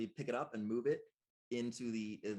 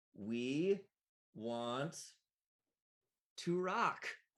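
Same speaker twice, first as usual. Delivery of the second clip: robotic, mechanical animatronic robot voice; 4 semitones higher than usual. Describing an animatronic band ride, voicing its mechanical voice. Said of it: "in a mechanical voice".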